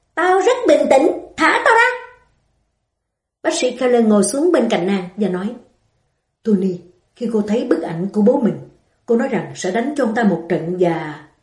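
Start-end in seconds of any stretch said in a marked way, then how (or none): 0.2-2.0 high, sharp, snapping shout. A woman answering a doctor who tells her to calm down, shouting. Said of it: "Tony quát lên".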